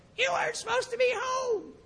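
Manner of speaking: little squeaky voice, very high. Retelling a woman arriving by car with a gift: little squeaky voice. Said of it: "this little squeaky voice goes".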